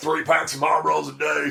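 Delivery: really scrappy, ragged, high, rough, raspy voice. Telling how Rabbit answers people who ask about his voice, imitating Rabbit's scrappy voice. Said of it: "He's got a real scrappy voice like this".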